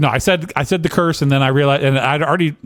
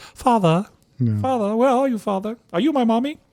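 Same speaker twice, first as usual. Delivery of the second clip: put-on high, creepy ghost-child voice, British accent; 9 semitones higher, 4 dB quieter than usual. Joking about being called Father, doing a creepy British ghost child voice. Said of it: "creepy, like uh, uh, British ghosts".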